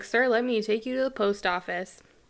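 normal talking voice

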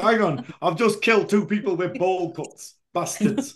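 put-on Yorkshire accent. Speakers joking around about accents, one putting on a Yorkshire accent. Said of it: "Sorry, Yorkshire".

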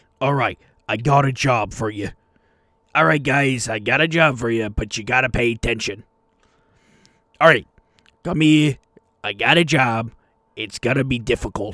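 rough, gruff innkeeper voice. Playing tavern keeper Barry offering the group a job, in a gruff Barry voice. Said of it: "he's kind of got like a gruff voice".

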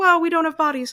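put-on tearful, breaking voice. Speaker retells what a woman said, retelling her voice breaking. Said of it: "Her voice is breaking".

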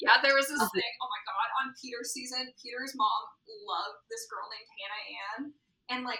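normal talking voice

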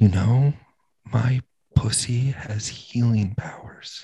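slow, hushed, close-to-the-ear whisper. Retelling what a girl at a bar said: imitating a whisper. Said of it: "leans in and whispers in my ear".

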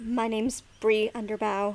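barely-there, very quiet, soft, hushed voice. Voicing a character who gives her name to a group: speaking very quietly. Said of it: "very quietly but verbally".

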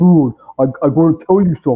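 put-on thick New York accent. Retelling what a man beside him at dinner told him, in a big new york accent. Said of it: "his big sort of New York accent".

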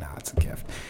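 soft, unvoiced whisper. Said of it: "but I was like".

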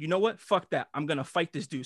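ordinary delivery

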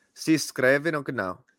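Japanese-sounding accent. Repeating a Portuguese phrase after another speaker: sounding Japanese. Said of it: "I sounded Japanese there".

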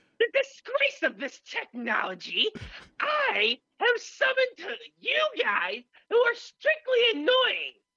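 very high, squeaky, swooping, annoying silly voice. Voicing the caged, muzzled figure who was just woken up, put-on character voice. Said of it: "if you can do the voice for us".

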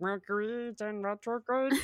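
froggy puppet character voice. Retelling own reply to people talking about astrology: Kermit the Frog voice. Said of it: "It sounded like Kermit the Frog there".

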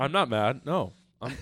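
put-on passive-aggressive voice. Retelling what a character said after an injury: imitating a passive-aggressive tone. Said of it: "passive-aggressive about it".

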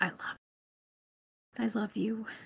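hushed, soft, quiet half-whisper. Playing a character, half-whispering lovingly to a cat: half-whispering to a cat. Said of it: "I just whisper to the cat".

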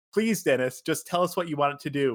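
put-on, acted begging, pleading tone. Retelling how two people begged Dennis for direction, acting out begging. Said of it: "They're begging him".

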